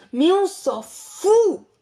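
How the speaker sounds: shouting. Reacting to another speaker's TikTok plug: shouting. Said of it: "arrête de crier".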